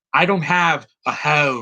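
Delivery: slow, drawn-out, fake American accent. Mocking an actress's American accent by quoting her line: imitating Sophie Turner's American accent. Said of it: "This is her American accent".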